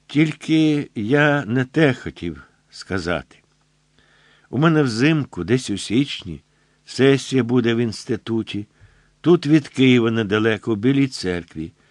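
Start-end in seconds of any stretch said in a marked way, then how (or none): none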